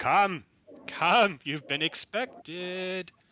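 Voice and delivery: lilting, sing-song voice. A storyteller voices a woman calling out from a cave: lilting voice. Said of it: "a lilting voice comes out of the".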